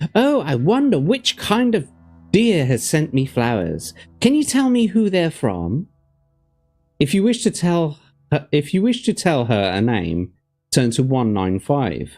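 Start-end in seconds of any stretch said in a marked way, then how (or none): 0.1-5.9 put-on excited, eager young woman's voice, high and swooping. Reading a gamebook aloud, voicing a woman receiving flowers: excited young woman's voice. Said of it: "The woman's voice sounds excited as she calls".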